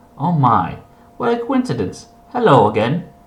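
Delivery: put-on sing-song character voice. Reading a scene aloud and voicing a character's lines in a put-on character voice. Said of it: "I don't know why I'm doing the voices".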